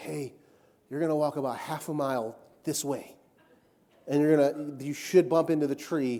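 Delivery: imitated whisper. Retelling how a man leaned over and pointed him the way in the woods, retelling a whisper. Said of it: "he whispers".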